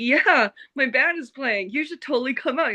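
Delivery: eager, all-excited tone. Retelling inviting two ladies to the show: imitating own excited past words. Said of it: "I was all excited".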